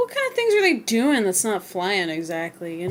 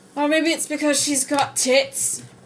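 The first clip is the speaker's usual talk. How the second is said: put-on Scottish accent, pitched higher; 6 semitones higher than usual. Reacting in character to what another character just said, in a Scottish accent. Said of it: "in the Scottish accent".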